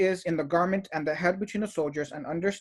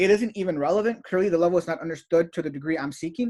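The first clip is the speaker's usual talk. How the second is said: plain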